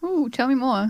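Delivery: sarcastic, faux-intrigued "ooh". Answering another speaker's talk about games, sarcastic-sounding. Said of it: "This sounds so sarcastic".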